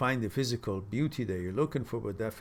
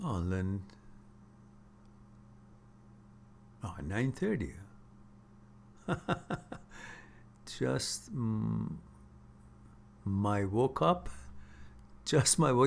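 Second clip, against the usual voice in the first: very slow, drowsy, just-woke-up sleepy voice. Speaking to a listener just after waking up, sleepy, just woke up. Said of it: "you sound like you're sl- sleepy".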